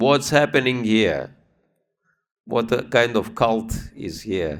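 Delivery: furious, very angry, accusing and demanding voice. Speaker retells someone finding a man bowing to a picture, retelling a very angry demand. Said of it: "very angry voice saying".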